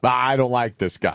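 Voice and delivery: mock grave, very stern, disapproving tone. Repeating what he heard a man said, retelling a very stern remark. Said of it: "in a very stern voice".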